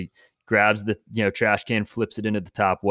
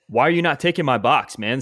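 acted angry voice, pitched higher; 5 semitones higher than usual. Retelling confronting the garbage truck driver: retelling own angry words. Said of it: "I was pissed".

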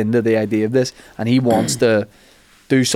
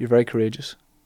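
put-on sweet, sly voice, quieter; 5 dB quieter than usual. Retelling what Attenborough said to someone: imitating someone nice but sly. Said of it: "trying to be nice, like, also a bit sly".

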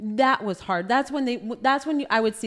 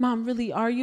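normal talking voice

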